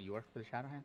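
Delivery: whispered in a put-on character voice. Voicing a character who pulls someone in close: whispering in character. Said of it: "and I'll kinda whisper".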